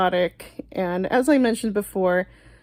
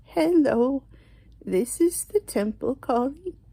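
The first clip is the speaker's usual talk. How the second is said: higher, put-on elderly woman's voice; 5 semitones higher than usual. Prank call, pretending to be her boss from the temple: put-on old lady voice. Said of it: "my uh, old lady voice".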